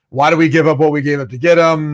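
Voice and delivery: ordinary talk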